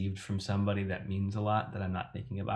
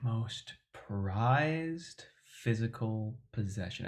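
slow, unhurried, drawn-out, stretched delivery; 2 semitones higher than usual. Asked about a most prized possession, speaker repeats the question in a slow tone. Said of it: "I repeat the question in a slow tone".

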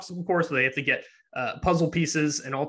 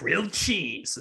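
put-on, gravelly, strange voice; 3 semitones higher than usual. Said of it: "he said it in, like, a gravelly, like, very strange voice".

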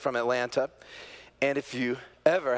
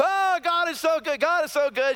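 mock crying, very high, loud and tearful; 6 dB louder than usual. Retelling a woman finding her lost rings, imitating someone crying.

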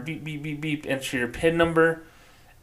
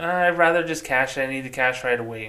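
ordinary talk

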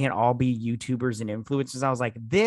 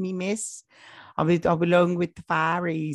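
affected, fake British accent, pitched up; 6 semitones higher than usual. Speaker switches into the accent partway through a joking bit, in a british accent. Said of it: "you want to do the rest of this in a British accent".

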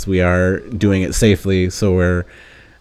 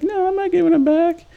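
put-on voice pitched very high, badly done. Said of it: "my bad impression of [name] and [name]".

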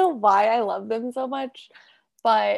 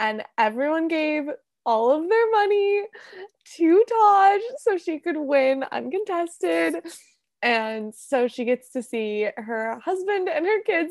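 emotional, pitched-up, on the verge of tears; 5 semitones higher than usual. Recounting a video message about a mother seeing her family, tearing up. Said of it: "No, I'm literally tearing up".

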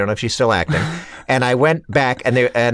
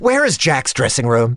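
put-upon, pretend fed-up exasperation. Retelling how a friend asked a passing woman the way: imitating faux exasperation. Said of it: "says with faux exasperation".

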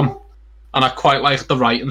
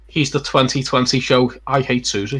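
normal talking voice

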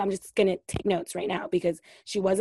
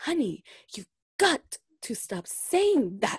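very slow sing-song drawl, every T hit hard; 4 semitones higher than usual. Repeating the line from the show, imitating Dorit emphasizing her T's. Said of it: "I love when she emphasizes her T's".

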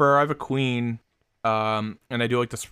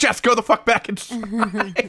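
high, laughing mock yell. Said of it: "We're like".

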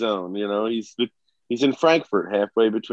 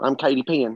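put-on girl voice with Ozarks accent; 3 semitones higher than usual. Katie isn't here, so you show the others how she would sound: Katie Penn impression. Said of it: "That's a good impression".

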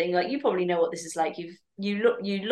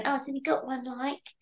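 pitched-up, disparaging, judgmental tone; 6 semitones higher, 6 dB quieter than usual. Acting out people judging a post: impression of people judging. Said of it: "you just did an impression then".

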